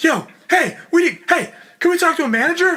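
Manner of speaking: loud, pitched way up, full theatrical acting voice. Retelling how Wes demanded a manager: imitating Wes in full-on actor mode. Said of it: "Wes goes into full-on actor mode".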